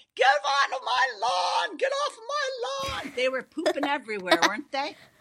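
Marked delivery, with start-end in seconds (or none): 0.2-3.1 mock, very high, drawn-out old-lady yell. Recalling chasing geese off the lawn, imitating an old lady yelling. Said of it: "I felt like an old lady yelling at".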